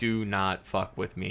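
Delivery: plain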